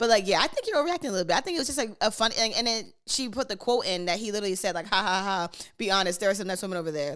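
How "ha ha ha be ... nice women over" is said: put-on laughing, joking voice. Retelling a man's joke about women over there: imitating someone laughing while joking. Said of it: "he was laughing, like, he was joking".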